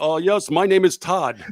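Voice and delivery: put-on Indian accent. Mocking a customer support agent from India giving a fake name: imitating Indian customer support caller. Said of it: "just do what customer support out of India does".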